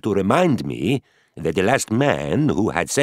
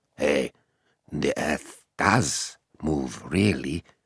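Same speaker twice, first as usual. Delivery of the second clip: muttered under the breath, lower, quieter, slower; 5 semitones lower, 5 dB quieter than usual. A narrator reads the first-person speaker's line as he leaves the room, under the breath. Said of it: "I say under my breath".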